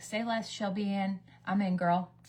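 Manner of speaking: usual speaking voice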